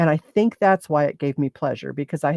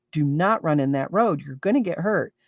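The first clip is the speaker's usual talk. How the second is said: stern, mean scolding voice. Retelling scolding a child who kept running in the road, put-on mean mom voice. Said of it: "I'm using my mean mom voice".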